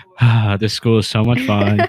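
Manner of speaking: bored, flat monotone like reading a script. Imitating another speaker's line about the school: imitating a bored voice. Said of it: "You sounded so bored saying that".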